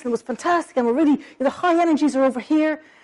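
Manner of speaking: lively, thrilled, high-energy excited talk. Demonstrating speech tempo when excited, fast, high-energy excited talk. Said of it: "when you're excited, you might be really talking like this".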